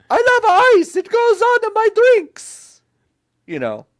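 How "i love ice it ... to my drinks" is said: very high, loud cartoon Italian plumber voice. Imagining what Mario would say about ice, in a Mario voice. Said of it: "That's classic Mario".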